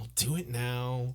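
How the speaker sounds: put-on resigned sighing voice. Retelling how Jaqen gives in to Arya: imitating a resigned Jaqen. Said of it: "the resigned look on his face".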